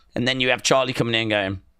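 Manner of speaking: ordinary talk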